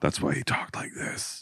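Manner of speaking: very hushed, barely sounded whisper. Describing how a dying father talked, imitating a whisper voice. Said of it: "He had, like, a whisper voice".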